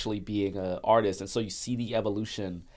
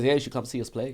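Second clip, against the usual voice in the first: put-on Irish accent, Dublin style; 3 semitones higher than usual. Retelling a boy's lines from a film about making a band: Irish accent. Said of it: "you just busted out the Irish accent?".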